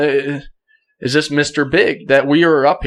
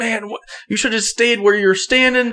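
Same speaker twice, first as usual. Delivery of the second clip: put-on yell, higher; 8 semitones higher than usual. Retelling how a hunting partner yelled after a missed shot: imitating someone yelling. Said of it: "he's yelling at me".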